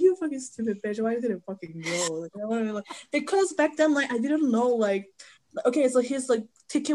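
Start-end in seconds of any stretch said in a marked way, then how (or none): 0.0-2.3 mock-tearful, crying, scolding tone. Regretting a missed concert, the speaker acts out their past self crying. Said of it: "I was like crying".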